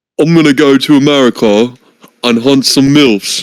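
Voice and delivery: put-on British accent. Asked to say it as a British guy would, the speaker complies in a British accent. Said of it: "Say that right now in a British accent".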